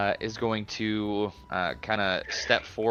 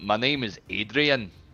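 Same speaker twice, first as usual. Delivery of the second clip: put-on Scottish-accented voice. Playing a character answering a question about his name, in a Scottish accent.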